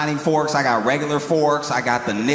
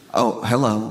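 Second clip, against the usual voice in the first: put-on lovestruck tone, lower; 4 semitones lower than usual. Acting out a salesman greeting the person who opened the door: acting smitten. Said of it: "he's immediately smitten".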